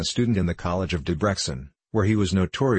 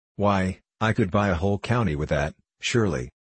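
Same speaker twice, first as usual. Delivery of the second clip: ordinary delivery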